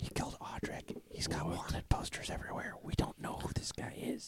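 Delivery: very quiet, hushed whisper. During a role-play game, a player talks to the group in a whisper. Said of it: "What are you guys whispering about?".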